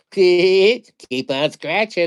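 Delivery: eerie, unsettling, creepy mascot voice. Describing a lottery-ticket mascot, imitating his creepy mascot voice. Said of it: "That's his voice".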